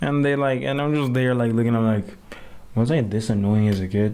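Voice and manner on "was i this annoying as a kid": ordinary delivery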